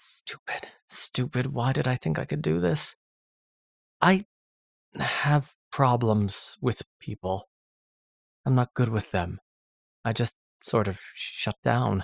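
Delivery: stammering. A man ignored by the men on deck speaks, stammering. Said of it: "he stammered".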